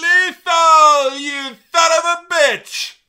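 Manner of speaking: very loud, shrill, drawn-out put-on wrestler yell. Retelling a story, quoting Ric Flair's outburst: imitating Ric Flair yelling. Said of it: "Ric Flair would just be like".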